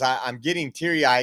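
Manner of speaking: ordinary talk, nothing marked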